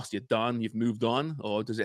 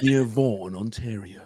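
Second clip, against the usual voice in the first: nature documentary narrator voice; 4 dB louder than usual. Continuing the bit after being told of the likeness: David Attenborough voice. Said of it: "You sounded like David Attenborough there".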